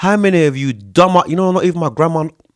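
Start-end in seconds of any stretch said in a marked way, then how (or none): 0.0-1.2 slow, deliberate, drawn out word by word. Repeating a question to the listeners a second time, said again slowly. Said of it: "I'll say that again slowly".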